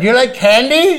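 put-on yell. Retelling a film scene where he yelled at a co-star: imitating a yell. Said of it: "and I'm yelling at him".

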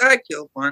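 offhand, casual, nonchalant delivery, pitched way up high. Retelling answering an excited question in camp: imitating own nonchalant past reply.

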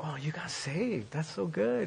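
thrilled, happy, excited, gushing delivery. Retelling what she said on coming up to the speaker: imitating someone excited. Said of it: "She was so excited for me".

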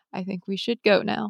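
very quiet, hushed voice. Retelling what someone on the bus said during a tense wait: imitating someone speaking very quietly. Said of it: "Herbert said very quietly".

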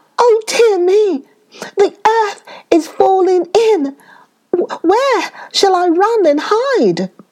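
squeaky, gasping, very high, frightened rabbit voice. Reading a story, the timid little rabbit panics at a noise, frightened. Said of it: "there lived a very timid little rabbit who was always trembling for fear that something terrible was going to happen to him".

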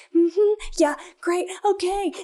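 passive-aggressive. Showing how people sound when they are mad but trying to joke it off, imitating passive-aggressive people. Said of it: "trying to joke it off".

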